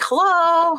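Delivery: high, loud, belted cat-like yell.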